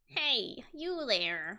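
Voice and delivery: put-on old lady voice calling out. Voicing a security guard in a game: old lady voice. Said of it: "what's an old lady sound like?".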